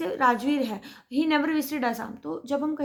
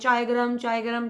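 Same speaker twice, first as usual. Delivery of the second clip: ordinary delivery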